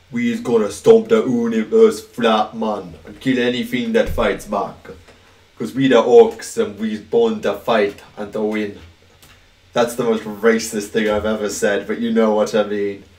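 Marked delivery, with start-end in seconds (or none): 0.1-8.8 put-on Jamaican accent. Speaker voices an orc line: Jamaican accent. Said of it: "a Jamaican accent".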